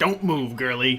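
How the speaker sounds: harsh, rough, coarse-toned voice. As game master, the speaker voices an unseen character in a coarse voice. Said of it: "you hear a coarse voice announce".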